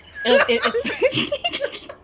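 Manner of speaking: high, slow fit of laughing.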